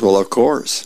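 ordinary delivery, nothing marked

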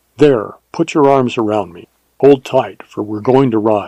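ordinary delivery, nothing marked

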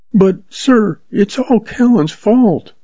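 begging tone. Narrator voices a sister speaking for her brother to a man: pleading. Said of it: "sister pleads for her brother".

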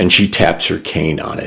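plain reading voice

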